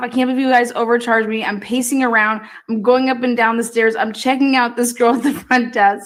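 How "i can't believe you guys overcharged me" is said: plain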